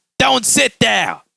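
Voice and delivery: mock high, rough, sudden yell. Retelling how a nun teacher reacted when a student sat down: imitating a nun yelling. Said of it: "she yells".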